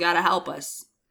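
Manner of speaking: usual speaking voice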